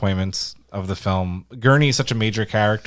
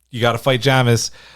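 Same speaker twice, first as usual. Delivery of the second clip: chill, relaxed put-on voice. Quoting a film character's line in a calm, chill Stilgar voice. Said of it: "the calm, chill, like".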